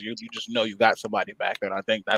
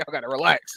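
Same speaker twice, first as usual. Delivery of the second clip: usual speaking voice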